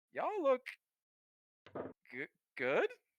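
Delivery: pitch rises at the end of final good. Speaker voices a character who greets the group: upward inflection at the end. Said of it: "He has like an upward inflection there at the end".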